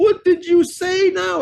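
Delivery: mock very high voice near tears, drawn out. Larry retells his mother's phone call, imitating mom almost crying. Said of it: "She's almost crying".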